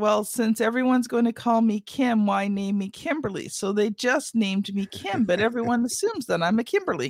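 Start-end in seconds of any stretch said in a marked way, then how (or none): none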